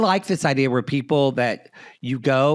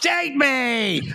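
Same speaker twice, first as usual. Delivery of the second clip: mock furious, very high angry shriek; 12 semitones higher than usual. Imagining an angry dating-profile writer: angry screaming. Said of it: "really angry, just screaming".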